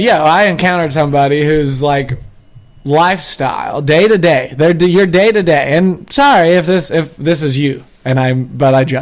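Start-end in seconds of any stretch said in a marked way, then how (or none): none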